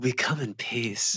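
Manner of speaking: acted, soft, slow, very drawn-out, flirty, breathless. Imitating the captain greeting aliens: imitating a flirty, breathless captain. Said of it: "flirty and out of breath".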